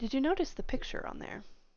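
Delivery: hushed, very quiet, confidential voice. A character, flipping into a bag, asks another a question: speaking very quietly. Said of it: "and I'm saying this very quietly".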